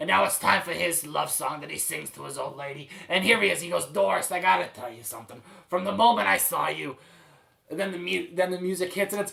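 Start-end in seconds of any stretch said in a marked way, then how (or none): 3.9-7.0 gruff put-on garbage man character voice. Acting out a made-up musical's garbage man: cigar-chomping garbage man voice. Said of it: "he talks like this the entire time".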